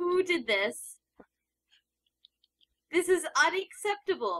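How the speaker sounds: mock outrage, half joking. Speaker reacting to another trainer's oddly named Venusaur, with mock anger. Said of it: "You hear the anger in my voice".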